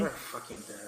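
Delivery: hushed voice. Voicing Alan's crew reacting to the situation: whispering. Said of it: "they're, like, whispering".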